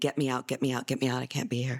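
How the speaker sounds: put-on desperate, begging voice. Retelling how a jailed son kept begging: imitating someone begging. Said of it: "he's just begging".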